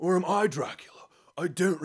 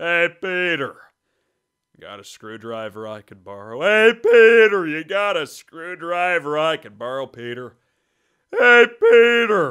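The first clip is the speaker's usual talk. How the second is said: booming, very loud, casual, same each time; 10 dB louder than usual. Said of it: "That's uh, Patrick Warburton".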